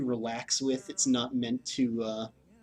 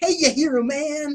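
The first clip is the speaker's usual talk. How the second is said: very high, very loud, hip slangy fairy voice; 9 dB louder than usual. Speaker describes the fairies in a video game: hip slangy fairy voice. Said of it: "the really hip fairy who's like".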